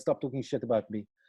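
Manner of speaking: ordinary delivery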